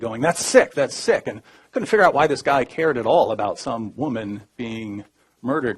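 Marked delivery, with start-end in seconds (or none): 0.2-1.3 scolding yell with the voice pitched up. Retelling how a guard reacted to a remark: imitating a guard yelling. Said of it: "he starts yelling at me".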